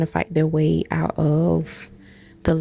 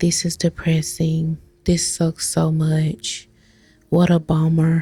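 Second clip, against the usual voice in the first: put-on gloomy voice. Imitating a character complaining after transforming: imitating depressed Okuran.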